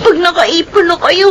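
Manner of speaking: put-on tearful, weeping child voice. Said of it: "O siya, tahan na".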